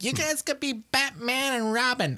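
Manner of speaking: play-acted, very high, hollering, yelling mom voice. Retelling how a friend's mom yelled about Halloween costumes: imitating Bee yelling. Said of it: "that's actually a really good Bee impersonation".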